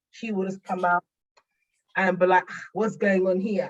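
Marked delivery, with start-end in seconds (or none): 2.7-3.7 put-on auntie voice, West African accent. Speaker lets the inner auntie she calls Funke come out: Funke auntie voice. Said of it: "she will have that voice in my head".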